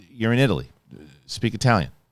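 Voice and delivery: ordinary talk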